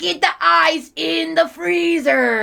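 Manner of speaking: creaky, rough, loud cartoon crab voice. Retelling a SpongeBob episode scene: Mr. Krabs impression. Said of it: "I like your Krabs impression".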